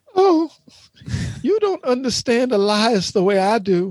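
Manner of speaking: high, genteel put-on Southern belle voice. Mocking someone who wants to be a southern belle, in a mock southern belle voice. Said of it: "That's my voice of a Southern belle".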